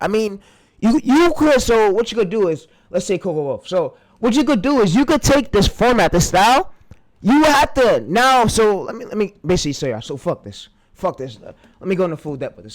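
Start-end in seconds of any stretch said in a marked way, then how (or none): 9.9-12.7 mad, angry, worked-up and fed-up outburst. Ranting about coaches who feed viewers lies: angry. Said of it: "So I can see that I'm mad today".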